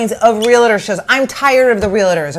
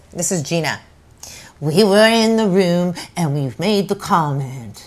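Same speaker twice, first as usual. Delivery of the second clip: put-on New York accent, lower and quieter; 6 semitones lower, 5 dB quieter than usual. Imitating Gina talking about hearing the comment: Gina imitation. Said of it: "She goes".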